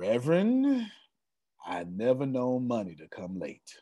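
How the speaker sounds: put-on slow old man drawl with swooping pitch. Retelling what an old preacher said when handed late money: imitating Kerry Tillman's slow voice. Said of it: "He talks so slow".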